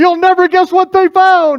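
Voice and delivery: loud, very high shout in an announcing tone. Recalling throwing open doors so the whole building could hear: retelling a loud shout. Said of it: "I shouted out just as loud".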